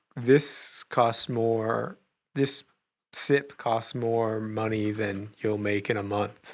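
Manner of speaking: very slow delivery with drawn-out words.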